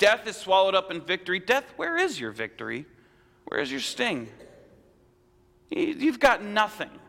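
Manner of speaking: mocking, taunting tone. Speaker quoting a scripture writer's words addressed to death, in a quoted mocking tone. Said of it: "almost in a mocking tone".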